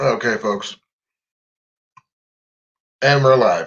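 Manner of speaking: talking through a mouthful, chewing mid-sentence. Starting a live broadcast while eating jerky: chewing while talking. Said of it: "Sorry about me chewing food".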